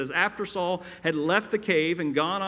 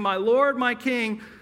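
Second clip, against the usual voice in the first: put-on raised shouting at full cry; 6 semitones higher, 4 dB louder than usual. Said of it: "his enemy shouting".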